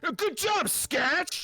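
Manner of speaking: very high, loud, full-lunged shriek. Voicing a character reacting to a kicked-in door: shouting at the top of his lungs. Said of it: "Like, at the top of his lungs".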